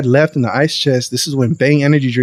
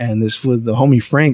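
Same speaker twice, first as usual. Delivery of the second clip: plain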